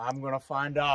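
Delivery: loud, clumsy fake Australian accent. Talking with Travis about the rattlesnake holes: bad Aussie accent. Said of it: "That's my Aussie accent".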